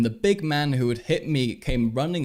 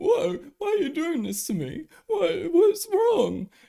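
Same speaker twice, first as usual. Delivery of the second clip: mock very high, playing-the-victim innocent voice. Imitating how a man acts as the innocent victim: mock innocent-victim tone. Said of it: "puts on like this tone of like".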